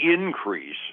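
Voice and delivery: increase with first syllable in- punched. Reporting the odds of a Fed rate change: stress on IN of increase. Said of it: "gotta emphasize that first syllable".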